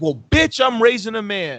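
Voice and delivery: high, blunt, unhesitating mom yell. Retelling mom answering a stranger who told her to calm down: retelling mom's yell. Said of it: "And my mom yelled".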